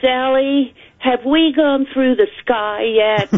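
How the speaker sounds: put-on high Australian accent of a five-year-old girl. Retelling what the youngest child said to her, in a wonderful Australian accent. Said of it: "she said in this wonderful Australian accent".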